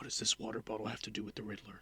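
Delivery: very quiet near-whisper held on one level note. Critiquing Jeffrey Wright's delivery by imitating his line: imitating Jeffrey Wright whispering monotone. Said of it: "he's just kind of whispering and it's very monotone".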